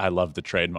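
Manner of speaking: soft, hushed half-whisper with no voice. Retelling what the other speaker's dad came over to say: imitating a half-whisper.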